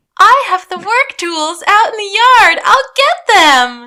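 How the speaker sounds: very high, slow, passive-aggressive, angry-happy sweetness. Retelling a neighbor's line while grinning the whole time: imitating passive-aggressive villain cheer. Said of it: "she's angry happy".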